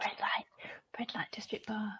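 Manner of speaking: secretive, very quiet, breathy whisper. Repeating a bar's name after another speaker suggests it: whispering. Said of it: "Why are we whispering that?".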